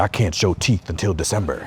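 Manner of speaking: deep, very low growling voice. Acting out a teacher trying to be stricter: imitating a growl. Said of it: "And you start growling".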